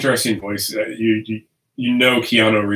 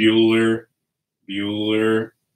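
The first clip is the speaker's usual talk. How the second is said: put-on monotone voice. Recalling how Ben Stein used to be in everything, do a Ben Stein monotone. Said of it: "just had that like monotone".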